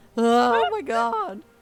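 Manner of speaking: very loud put-on teenage voice. Doing a bit, the speaker switches into a teenage voice. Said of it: "I'm gonna do my teenage voice".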